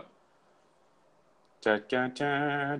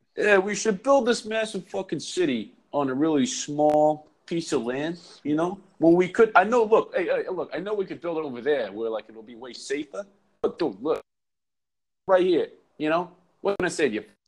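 put-on New York–accented speech. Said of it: "they were like".

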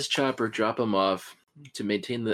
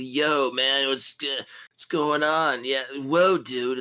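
laid-back surfer voice, higher, slower; 3 semitones higher, 4 dB louder than usual. Describing a motorcycle character named Combat Chopper, do Combat Chopper surfer voice. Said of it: "it's kind of like a surfer kind of".

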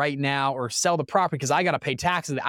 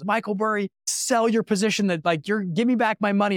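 mock yelling, much higher; 6 semitones higher than usual. Retelling a movie scene where an investor storms in on a fund manager, retelling an investor yelling. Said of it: "starts yelling at him".

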